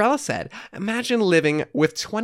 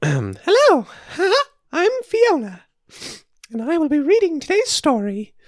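put-on cartoon mouse voice, much higher, louder; 8 semitones higher, 4 dB louder than usual. Starting a fill-in story aloud as its narrator; Mickey Mouse-like voice. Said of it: "this voice sounds kind of like, similar to my Mickey Mouse".

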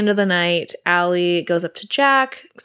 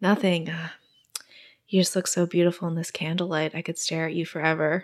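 put-on smooth, cheesy romantic tone, quieter; 6 dB quieter than usual. Retelling what a date said at dinner, imitating his smooth romantic talk. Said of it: "a guy who kinda talked like this".

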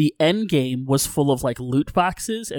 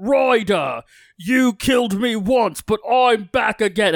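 put-on very slow, drawn-out, high orc accent; 7 semitones higher than usual. Retelling what a returning orc captain says in the game: orc accent. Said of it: "they've got that fun, you know, orc accent".

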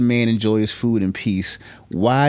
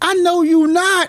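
very high, loud, shrill voice; 4 dB louder than usual. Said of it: "he said it so loud".

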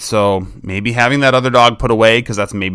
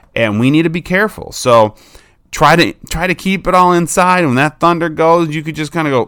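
plain

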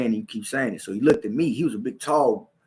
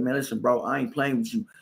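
ordinary talk, nothing marked

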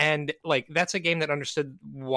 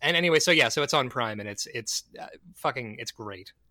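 usual speaking voice

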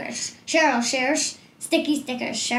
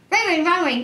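faster pace, higher pitch; 5 semitones higher, 5 dB louder than usual. Saying a tongue twister after calling for more speed: faster tongue twister.

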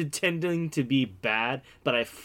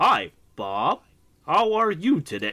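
put-on bad dub acting, slow and stilted; 3 semitones higher, 4 dB louder than usual. Describing early PlayStation game localization: imitating bad game voice acting. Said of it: "the delivery on certain lines was fucking hilarious".

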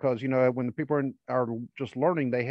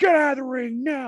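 loud, shrill, high-pitched mock yell; 12 semitones higher, 6 dB louder than usual. Retelling how a wrestler's partner yelled at everyone in the ring, imitating his yelling. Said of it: "he's yelling at all of them".

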